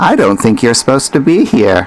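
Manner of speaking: put-on sing-song little old lady voice. Game master voices a presence in the player's head, little old lady voice. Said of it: "You hear a little old lady voice say".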